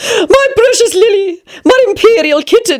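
put-on high old woman voice, exclaiming. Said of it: "You sound like Lady Fanshawe".

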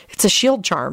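plain reading voice

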